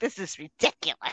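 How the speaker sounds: mocking, put-on entitled tone. Retelling what a woman at the register said: imitating a Karen-like woman. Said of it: "very, very Karen-like".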